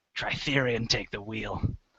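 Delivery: under-the-breath muttering. Standing with a battle axe just before charging in, muttered under the breath. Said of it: "I sort of mutter under my breath".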